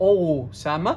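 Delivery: opening O of the word stressed hard. Spelling out a name for official papers, stressed first O in Osama. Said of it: "لازم اشد قوي على الاو وانطقها او سامه".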